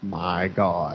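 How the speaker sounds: put-on flattest deadpan, low dead-flat monotone. Describing a film scene, quoting the cop in Buck Flower's cop, flat monotone. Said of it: "in the most monotone voice ever. He's like".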